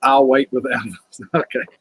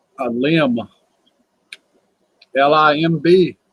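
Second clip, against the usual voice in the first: talking with mouth full, much slower; 2 semitones higher, 3 dB louder than usual. Chatting with others about a fallen tree limb, talking with mouth full. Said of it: "I got my mouth full. I can't talk".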